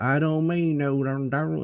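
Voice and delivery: fake Southern drawl, high and slow. Mocking a politician who fakes a Southern accent down south: imitating Hillary Clinton's fake Southern accent. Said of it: "he fakes a Texas accent".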